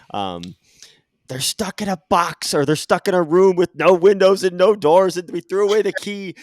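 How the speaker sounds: very loud, high, shrill screaming taunt. Recalling a man screaming onto the field from the sideline, imitating his scream. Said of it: "he's just screaming onto the field".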